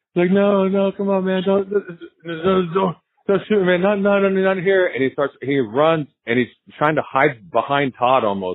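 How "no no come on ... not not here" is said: high, mock shrieked, full-on screaming voice. Retelling how a friend begged not to be shot: imitating someone screaming. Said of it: "he just starts screaming".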